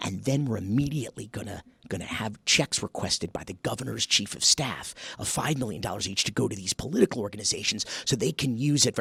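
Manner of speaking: hushed voice. Showing the whisper test on a shady money plan: whispering. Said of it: "so this is the whisper test".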